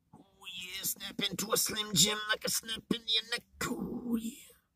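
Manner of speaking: high, hushed, quiet wrestler promo voice. Mid-rant, slipping into a Macho Man impression. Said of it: "I just turned into Macho Man".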